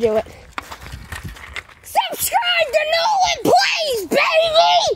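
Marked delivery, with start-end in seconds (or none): 1.8-5.0 shrill, very high, full-voice, very slow scream. Doing a challenge while the neighbors are out, screaming. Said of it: "I'm gonna scream it".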